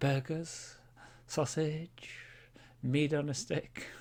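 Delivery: subdued street-vendor cry. Comparing street vendors' usual shouts, the speaker imitates their subdued hawker calls. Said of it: "They're very subdued".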